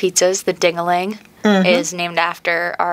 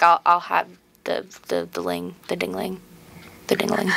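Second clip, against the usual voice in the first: mock awkward, tongue-tied, hesitant, embarrassed stumbling; 5 dB quieter than usual. Acting out people embarrassed to say a name: mock-embarrassed, hesitant. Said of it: "people get really embarrassed saying it".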